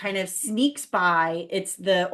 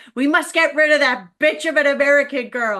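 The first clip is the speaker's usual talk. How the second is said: put-on screaming, higher and louder; 5 semitones higher, 6 dB louder than usual. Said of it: "she's just screaming".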